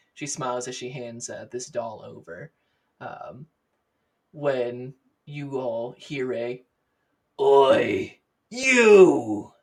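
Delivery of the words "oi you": very loud, barking shout cutting through. A red-faced dwarf calls out across a plaza at another character, in a deep barking voice. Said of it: "There's this deep barking voice".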